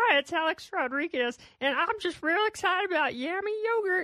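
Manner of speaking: small, high-pitched little frog puppet voice. Recalling how someone you interviewed for Yummy Yogurt talked, in a little Kermit the Frog voice. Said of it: "he had this little Kermit the Frog voice like".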